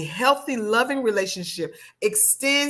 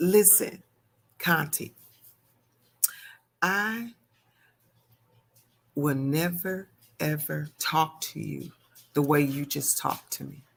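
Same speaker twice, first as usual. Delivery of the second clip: very quiet, hushed, soft-spoken delivery; 6 semitones lower, 4 dB quieter than usual. Retelling what a partner said during an argument: imitating a very quiet voice. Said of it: "very quietly, he said".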